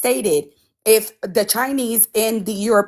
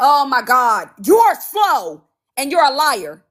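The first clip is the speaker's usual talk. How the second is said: angry outburst, losing temper; 3 semitones higher, 3 dB louder than usual. During a heated panel argument, she turns on another panelist, crashing out. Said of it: "she's crashing out".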